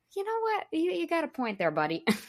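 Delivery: high, giving-in voice. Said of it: "you're just like".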